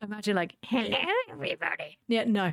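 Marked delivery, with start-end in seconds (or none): 0.6-2.0 unattractive fantasy goblin character voice. Describing how he voices characters when DMing, the speaker imitates one: goblin voice. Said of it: "his goblin voice".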